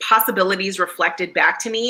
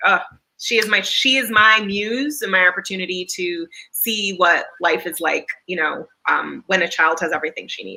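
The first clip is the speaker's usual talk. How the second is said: plain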